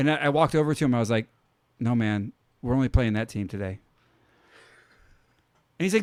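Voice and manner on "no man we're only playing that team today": imitated extra serious, deadpan tone. Retelling a sarcastic reply to a teammate: imitating own extra serious tone. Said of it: "in an extra serious tone".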